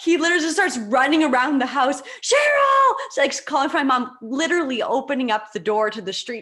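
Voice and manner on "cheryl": shrill, very high, loud scream. Retelling how dad ran around the house calling for mom: retelling dad's scream. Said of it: "Like screaming outside".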